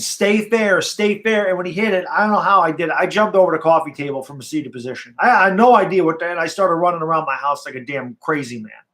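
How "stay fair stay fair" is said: mild scream, stretched out and high. Retelling watching a long game from the couch: retelling own screaming. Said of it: "I remember screaming".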